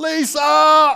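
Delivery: very loud, very high-pitched, urgent yell. Retelling hanging wallpaper on the ceiling, calling Lisa: retelling own yell. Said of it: "and I yelled".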